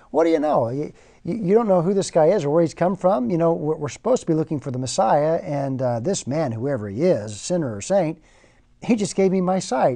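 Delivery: sarcastic, tossed back sarcastically.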